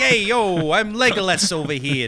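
drawn-out Brooklyn accent. Discussing Lord of the Rings accents with another speaker, in a put-on Brooklyn accent. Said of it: "it's not like a Brooklyn guy".

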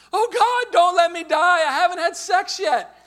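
very high, very loud, shrill, terrified scream. Recalling a near crash on a school trip, the speaker mimics a kid in the back: imitating a kid screaming. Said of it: "He screamed out".

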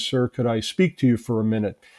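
ordinary talk, nothing marked

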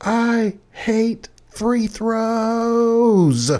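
acted, very high, very slow, drawn-out angry tantrum yell. Retelling how a player slammed the ball and yelled: imitating a girl yelling. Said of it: "turns around and yells".

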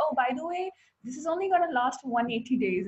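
very calm, casual, unbothered offhand tone. Retelling what he or she says: imitating someone saying it calmly. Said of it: "he or she will say it very calmly".

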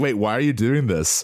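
baffled, confused tone. Retelling how townspeople react to being provoked: imitating confused townspeople. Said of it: "they're usually like".

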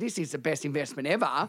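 normal talking voice

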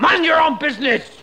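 exaggerated, outrageous French accent, pitched high. A frenchman brushing off a king's question, outrageous french accent. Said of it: "Why do you think I have this outrageous accent".

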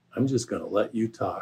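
gentle, soft-spoken, hushed delivery. Retelling a courtroom exchange, quoting the reply to a self-represented man: Dick's soft voice. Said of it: "Dick just said in his soft voice".

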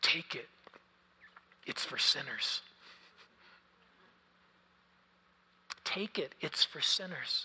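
hushed stage whisper. Retelling how a pastor spoke to a weeping woman: imitating a whisper. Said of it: "he whispered in her ear".

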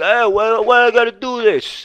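very loud, high, drawn-out griping tough-guy voice. Speaker imitates a client's partner balking at doing the work: imitating Chris. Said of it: "And he actually talks like this".

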